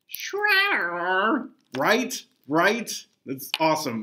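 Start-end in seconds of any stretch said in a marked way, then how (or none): 0.2-1.5 high-pitched cartoon character voice. Showing off a Krang impression while presenting game figures: Krang impression. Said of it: "I have to do my Krang impression".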